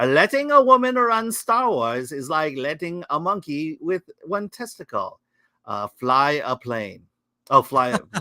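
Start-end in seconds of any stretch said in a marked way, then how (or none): 0.0-7.1 comic, put-on Kazakh-accented English. Introducing a saying from Kazakhstan as a joke, in a Borat voice. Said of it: "Borat voice".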